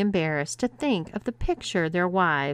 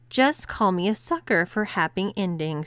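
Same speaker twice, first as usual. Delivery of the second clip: ordinary delivery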